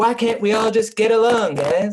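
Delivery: put-on sarcastic childish voice. Quoting a line of a cartoon character, imitating Cartman, sarcastic and childish. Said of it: "in a very sarcastic and childish way".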